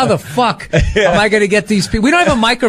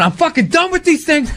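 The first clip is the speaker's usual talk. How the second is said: angry, flipping-out ranting, higher pitch; 7 semitones higher than usual. Retelling calls to a college agent after shows: imitating own past self flipping out. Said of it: "flipping out".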